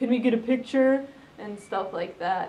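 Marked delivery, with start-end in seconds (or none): 0.0-1.0 snarky put-on drunk guy voice. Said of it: "making, like, snarky comments at me and was like".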